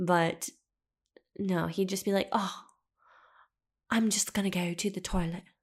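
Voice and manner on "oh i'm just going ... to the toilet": rough, attempted British accent. Quoting a man who used to correct the speaker, attempted British accent. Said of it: "I don't know if that sounded like UK".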